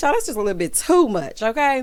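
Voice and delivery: ordinary delivery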